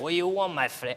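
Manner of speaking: mock, put-on Spanish accent. Urging another speaker to do the Spanish voice, put-on Spanish accent. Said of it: "Do the Spanish".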